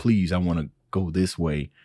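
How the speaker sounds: ordinary talk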